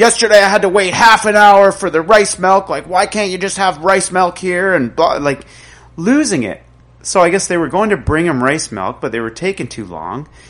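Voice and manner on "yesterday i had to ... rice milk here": mock high, loud ranting yell. Retelling a customer freaking out over missing rice milk, imitating his yell. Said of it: "he's like yelling at the guy like".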